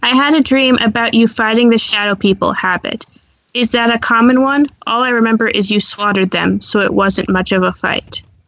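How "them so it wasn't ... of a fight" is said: ordinary talk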